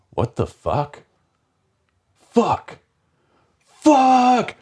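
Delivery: mock very high, swooping, drawn-out screaming. Retelling the moment the dye went into the arm: imitating own screaming. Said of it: "I'm screaming".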